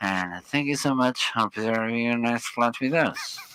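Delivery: rushed airline captain announcement voice. Imitating how pilots sound addressing passengers mid-flight, airline captain announcement voice. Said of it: "I can make the aircraft c- captain".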